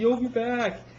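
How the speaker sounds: loud yell. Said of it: "yells back".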